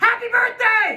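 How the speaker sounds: happy screaming, high and loud.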